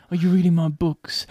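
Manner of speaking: put-on smoky British accent. Imitating an actor's accent in a film, smoky Hero Fiennes Tiffin voice. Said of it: "requisitely smoky".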